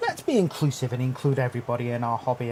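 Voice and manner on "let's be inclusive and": ordinary delivery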